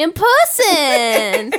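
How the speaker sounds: sudden put-on Southern drawl. Repeating a phrase jokingly in a sudden Southern accent. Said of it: "What just happened to your accent?".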